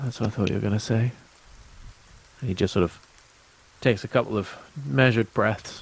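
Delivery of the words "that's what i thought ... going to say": uneasy, nervous, rushed delivery. Voicing a young character who looks out of his element: nervous character voice. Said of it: "he looks a little, a little nervous".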